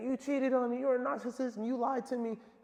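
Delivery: very high, sobbing, crying, accusing tone. Retelling a phone argument overheard at the gym: imitating someone crying and arguing. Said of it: "arguing on the phone, crying, saying".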